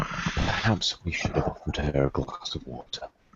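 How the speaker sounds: joking, whispered quip as an aside. Playing a character leaning toward another to joke: jokingly whispering in character. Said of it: "whisper to him".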